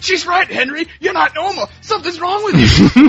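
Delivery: very high, shrill screaming rant. Recounting a movie scene, acting out the actor screaming at Henry: retelling Joe Pesci screaming. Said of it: "Joe Pesci's like screaming".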